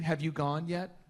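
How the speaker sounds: put-on grandmotherly old woman's voice. Retelling how a friend asked about the bathroom: imitating a grandma asking. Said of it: "like your grandma asks you".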